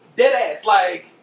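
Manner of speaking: ordinary delivery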